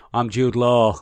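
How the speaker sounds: bad put-on Australian accent. Mocking an actor's film role: Jude Law's bad Australian accent. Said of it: "he's not great at the accent".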